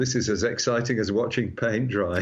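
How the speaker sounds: ordinary delivery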